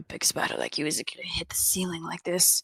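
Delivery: hushed, whispered mutter under the breath. As Acacius moving in to see the spider better, Acacius muttering under breath. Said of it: "just kind of like muttering under his breath".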